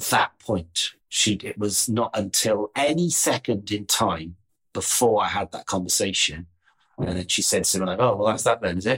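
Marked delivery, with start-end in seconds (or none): 8.0-9.0 teasing, sarcastic little remark. Retelling what she said after the conversation: imitating a sarcastic remark. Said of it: "typical of her little sarcastic".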